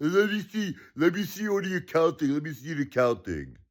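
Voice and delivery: heavily sarcastic, high, swooping taunting tone. Retelling a demand to see the accounting: imitating Elon Musk sarcastically. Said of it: "you sarcastic a-hole".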